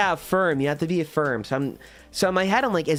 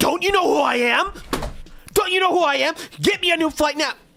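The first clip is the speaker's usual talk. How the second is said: very high, shrill, outraged, furious, entitled yelling; 12 semitones higher than usual. Acting out a rude passenger at an airline agent: imitating someone yelling. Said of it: "if you start yelling at them".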